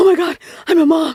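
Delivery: play-acted sudden high freaked-out outburst. Retelling a moment after becoming a mother: imitating own past freak-out. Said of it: "I freaked out one time".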